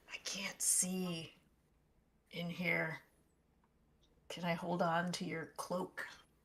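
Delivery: whispered voice. Playing a character in a dark cave, asking to hold a cloak: whispering. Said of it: "I would whisper over to whoever's closer".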